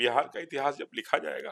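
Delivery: high, loud tearful outburst, choked up. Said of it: "फिर रोना क्यों आ गया".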